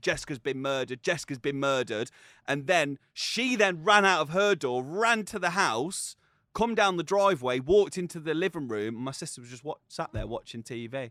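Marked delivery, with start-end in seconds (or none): none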